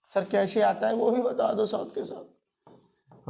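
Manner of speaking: fake crying and whining. Acting out a student asking the teacher to explain too: mock crying student. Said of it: "रो क्यों रहे हो".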